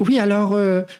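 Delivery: put-on tiny, small, high-pitched, young-sounding voice. Speaker recalling early videos, imitating own small young voice. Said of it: "où je suis en mode".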